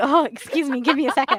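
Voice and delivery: flustered, thrilled, excited gush. Retelling the wife's reaction in the show: imitating a flustered, excited character. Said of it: "so turned on".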